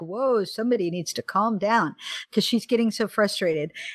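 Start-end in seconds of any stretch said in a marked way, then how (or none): none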